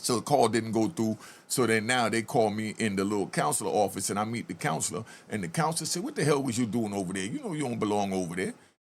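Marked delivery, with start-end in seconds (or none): 6.0-8.5 mock stern, no-nonsense, dead-serious voice. Retelling what a counselor said after catching him: imitating someone talking all serious. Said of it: "the way he was talking to me all serious".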